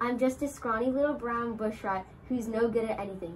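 ordinary delivery, nothing marked

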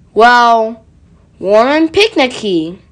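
usual speaking voice

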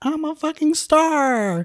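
mock very high, slow scream, "star" drawn out. Retelling a movie scene where a character screams: imitating Maxine screaming. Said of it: "screaming, like".

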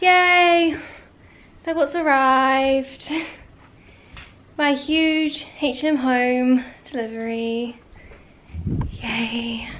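out of breath. Speaker greeting a big home delivery that just arrived, out of breath. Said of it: "I'm out of breath".

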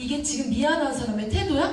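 high, sharp, angry voice.

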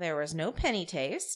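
ordinary talk

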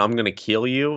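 play-acted, mild, half-shouted taunting yell. Retelling a fighter's trash-talk promo, imitating Colby Covington screaming. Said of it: "he's screaming".

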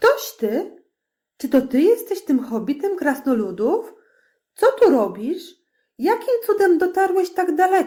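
clamouring volley, words piled on one another. Elves who have just seized a hobbit question him, shouting over each other. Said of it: "przekrzykując się nawzajem".

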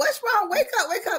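put-on desperate, panicked screams, pitched very high. Recalling her mother collapsing at Sunday dinner, retelling screaming at her. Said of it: "I was screaming at her".

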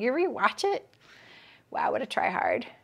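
light-hearted, playful teasing jab. Sewing livestream host ribs a viewer about rewatching, teasing. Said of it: "I'm just teasing".

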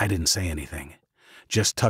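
plain

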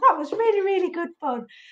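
soft, breathless, winded, out-of-puff voice. Host speaking to the stream after an activity, out of breath. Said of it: "I'm out of breath now".

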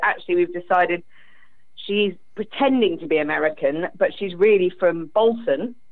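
ordinary delivery

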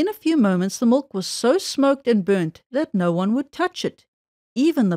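plain

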